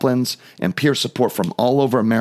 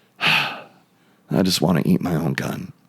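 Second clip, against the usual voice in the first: quiet, lower mutter under the breath; 6 semitones lower than usual. Retelling an officer's words said only to himself: imitating a mutter under the breath. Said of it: "he says under his breath".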